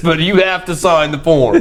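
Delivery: mock, very high, pleading official voice.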